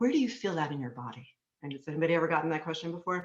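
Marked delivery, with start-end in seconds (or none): 0.0-1.3 lovely, soothing, gentle and comforting tone. Recalling a therapist interrupting with a question, imitating therapist's soothing voice. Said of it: "in her beautiful soothing voice".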